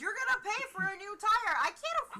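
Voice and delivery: put-on, loud, very high-pitched yelling. Arguing in character after a car tire is stabbed: yelling in character. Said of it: "yelling at each other outside".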